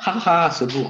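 mock laughing, ironic. Explaining that the friend calls herself dumb ironically, ironic put-on laugh.

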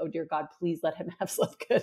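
pleading prayer-like voice. Retelling own thoughts while waiting for someone, retelling a desperate prayer. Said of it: "I'm praying like".

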